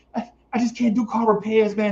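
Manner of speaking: high, panicky, helpless woman's voice. Retelling a woman's reaction to her car trouble, imitating a panicking woman. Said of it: "She panicking like".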